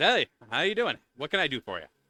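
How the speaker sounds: warm, friendly, easygoing, welcoming tone. Game master voices a man carrying wood greeting the players, warm, smiling greeting. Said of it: "He greets you with a warm smile".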